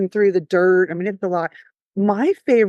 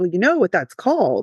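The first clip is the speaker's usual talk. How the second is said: put-on serious, deadpan tone. Retelling a client's joke during a plan review: imitating client's serious tone. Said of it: "my client looks at me real serious".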